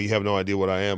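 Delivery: ordinary delivery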